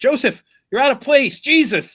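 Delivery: acted loud yell. Retelling a movie scene where the director yells at joseph: imitating a director yelling. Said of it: "the director yells at Joseph".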